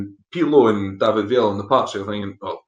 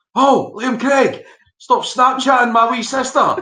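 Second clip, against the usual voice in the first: mock, very high, shrill heckling shout; 14 semitones higher, 3 dB louder than usual. Retelling what a boy in the crowd called out: imitating a fan shouting. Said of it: "a boy about three rows in front of me shouted".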